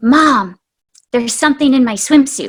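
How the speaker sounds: put-on whispering in a child's voice. Mother retelling her daughter Marin pulling her down to tell her something, retelling a whisper. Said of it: "she whispers".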